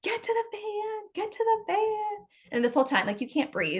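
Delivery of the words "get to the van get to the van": mock very high, stretched-out, drawn-out screaming. Retelling fleeing the house, calling the kids to the van: retelling screaming at kids. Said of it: "I start screaming at my kids".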